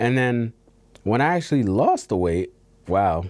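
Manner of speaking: voice cracking and breaking partway through. Talking about how people treated the speaker after losing weight, voice cracking. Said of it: "voice crack".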